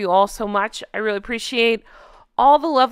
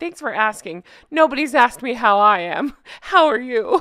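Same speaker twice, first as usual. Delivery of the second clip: heavy sarcasm in a caricature voice. Mocking a public figure's complaint about not being asked: imitating Megan. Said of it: "that's Megan's whole thing".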